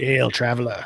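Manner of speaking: gravelly character voice. Narrating a scene, voicing a man who greets you: gravelly Uven voice. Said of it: "he speaks to you in a gravelly tongue".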